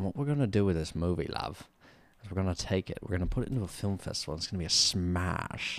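put-on British accent. Retelling what a British man said to them about their movie, in a British accent. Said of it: "this British Michael Myers".

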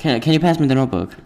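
casual, chatty tone. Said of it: "they're just all talking real fast".

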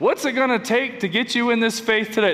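pushy, hard-sell used car salesman patter. Imagining how he could have talked instead: used car salesman voice. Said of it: "That's my used car salesman voice".

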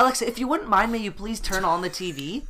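mock over-formal politeness. Imitating how she talks to the voice assistant, mock-deferential as if to royalty. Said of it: "like it's, like, the Queen of England".

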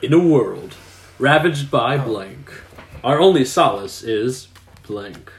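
narrative read in a storyteller narrator voice. Playing a card game, reading a card aloud in a narrator voice. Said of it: "I have to read this in a narrative voice".

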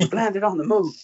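acted, very high, shrill shout. Retelling a favourite film moment where a character walks out: imitating a character shouting. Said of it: "He walks out and he just shouts".

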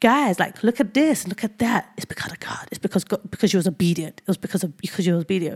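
put-on accent with a bit of Australian. Retelling what a man kept saying about obedience: imitating his accent with a bit of aussie. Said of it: "Think about this accent, but with a bit of Aussie to it".

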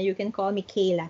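ordinary delivery

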